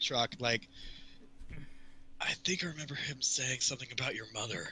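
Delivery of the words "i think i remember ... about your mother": stage whisper, quieter and faster. Retelling a game scene, a character speaks to Shrock: stage whisper. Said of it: "stage whispers".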